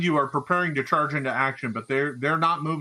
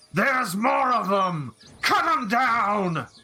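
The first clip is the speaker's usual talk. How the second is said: high, drawn-out, shouting and screaming orc voice; 7 semitones higher than usual. Game master voicing an orc on a platform screaming to other orcs: orc screaming orders. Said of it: "The Orc on top of the the the platform screams".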